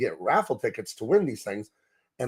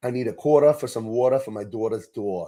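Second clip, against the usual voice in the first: put-on New York accent, put on on purpose; 2 semitones lower than usual. Retelling what a girl in high school said: imitating a New York accent. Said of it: "she could do a New York accent".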